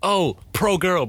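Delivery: high, slow, mocking slogan-like delivery.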